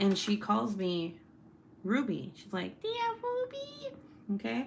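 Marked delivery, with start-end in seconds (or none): 2.8-3.9 very high, soft, tiny, squeaky chipmunk voice. Describing how her niece talks, imitating her calling her name in chipmunk voice. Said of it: "the cutest little freaking chipmunk voice".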